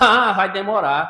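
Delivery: put-on derisive, mocking, dismissive tone. Retelling the administration secretary's answer about unpaid salaries, retelling a mocking reply. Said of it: "Ainda com um tom de deboche".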